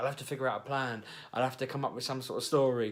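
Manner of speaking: usual speaking voice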